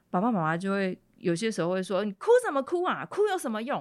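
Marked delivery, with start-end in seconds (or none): 2.0-3.8 high-pitched angry scolding tone. Explaining how parents react to a crying child, voicing them with angry scolding. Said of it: "都会变成用生气的方式展现出来".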